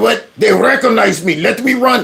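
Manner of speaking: put-on Ukrainian accent. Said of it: "work on your Ukrainian accent".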